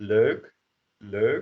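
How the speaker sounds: Belgian Dutch pronunciation. Explaining a dutch word to learners, belgian dutch pronunciation. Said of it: "a Belgian way".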